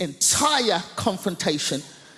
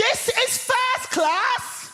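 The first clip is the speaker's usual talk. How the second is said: mock slow, shrill, very high, drawn-out full-voice shout. Speaker retells a woman in a first-class carriage, imitating someone shouting. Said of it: "at the top of her voice, she shouts".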